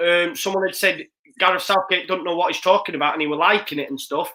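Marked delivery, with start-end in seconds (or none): none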